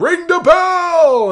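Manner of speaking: wild, shrill, very high, very loud scream, bell drawn out. Act out how he comes out of his office and calls to the ring announcer, imitating a wild yell. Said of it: "he just yells, like, wildly".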